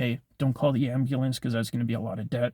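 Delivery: ordinary talk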